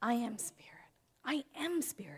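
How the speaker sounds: hushed, soft, unvoiced whisper.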